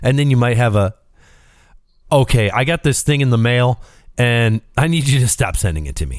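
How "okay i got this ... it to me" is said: normal talking voice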